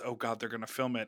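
muttering under breath. Retelling what a cast member said while seated: imitating mumbling under her breath. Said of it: "mumbling under her breath".

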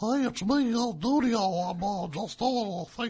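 very deep, very soft, hushed fake announcer voice. Talking about Dudio in the bathroom, the speaker does Dudio's fake announcer voice. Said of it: "He's got this fake announcer voice".

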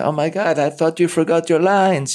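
bad put-on Israeli accent, very high pitched. Retelling what the script supervisor said after a take, imitating Ronit, bad Israeli accent. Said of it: "I was my bad Israeli accent".

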